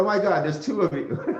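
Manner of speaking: mock stunned, disbelieving, high-pitched shocked exclamation. Retelling how a man reacted on seeing both twins, imitating a shocked man. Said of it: "the guy almost has a heart attack".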